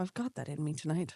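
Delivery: bad put-on Scottish accent. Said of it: "That was not Scottish".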